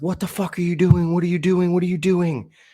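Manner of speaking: put-on, very high-pitched, frantic shrieking yell. Retelling how the roommate reacted to the pills: imitating someone screaming. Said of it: "he starts screaming".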